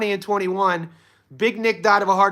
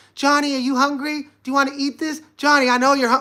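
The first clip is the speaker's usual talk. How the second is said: put-on elderly Italian woman's voice; 6 semitones higher than usual. Retelling what his Italian grandma always asked him: imitating Grandma Jenny. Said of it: "every time I go to my Italian grandma's house".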